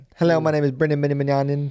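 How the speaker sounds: loud kindergartner voice with a partial speech impediment. Retelling saying own name in kindergarten: imitating own childhood speech impediment. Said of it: "in a kindergarten with a semi-speech impediment".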